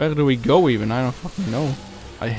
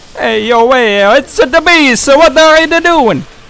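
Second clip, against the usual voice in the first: put-on New York Italian accent; 10 dB louder than usual. Reacting to the bees in the game, Italian New Yorker accent. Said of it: "I became an Italian New Yorker there".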